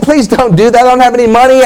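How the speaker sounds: put-on pleading tone. Retelling being expelled from a game by a security guard, acting out pleading. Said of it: "I started pleading".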